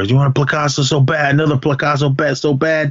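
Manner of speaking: play-acted, heated shouting. Retelling a scene where Paco yells at Spider, retelling a yell. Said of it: "he's yelling at Spider".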